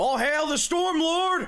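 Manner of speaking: aggressive, very high, very loud, shrill preacher's cry. Asked to preach inspiringly in character, proclaiming with aggressive preaching.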